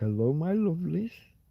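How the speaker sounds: sweet, lovely, soothing voice. Imitating a maths presenter's greeting: imitating a lovely soothing voice. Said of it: "this lovely soothing voice".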